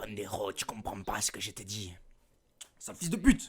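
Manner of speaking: low fake Mexican Spanish accent. Speaker mocking film dubbers who fake accents: fake Spanish Mexican accent. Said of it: "doublé par des mecs qui imitent un accent espagnol, mexicain".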